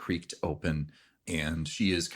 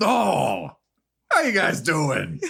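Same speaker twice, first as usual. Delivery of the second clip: shrill, loud, high, swooping, animated bear voice; 12 semitones higher, 8 dB louder than usual. Answering the group's knock at the door, speaking as a bear in bear voice. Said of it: "I have to do it with my bear voice now".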